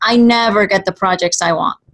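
normal talking voice

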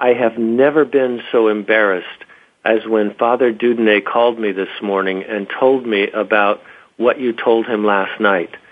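usual speaking voice

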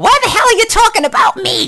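very high put-on granny voice. Imagining what a grandmother would say if listening: voicing Nana. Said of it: "if my Nana were listening to this, she would say".

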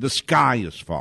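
ordinary talk, nothing marked

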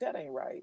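hushed, disapproving tone. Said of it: "Lawrence will be like".

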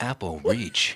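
movie trailer announcer-style narrator voice. Turning another person's story into a movie trailer, in a trailer announcer voice. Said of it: "and then I'll do a trailer style".

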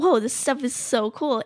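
ordinary delivery

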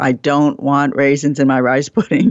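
normal talking voice

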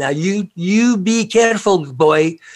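very slow, high-pitched Scottish brogue. Retell your grandmother's phone call before a scout trip to Algonquin Park, in her Scottish accent. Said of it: "in her Scottish accent, her beautiful brogue".

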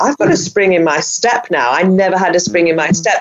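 ordinary delivery

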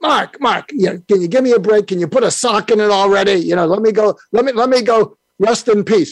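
put-on Brooklyn accent. The speaker acts out someone talking to mark, imitating a brooklyn accent. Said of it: "in his Brooklyn voice said".

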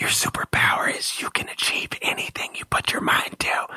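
voiceless whisper. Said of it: "I just whisper that into their spirit".

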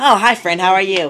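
put-on square, nerdy voice.

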